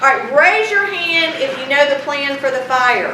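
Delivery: ordinary delivery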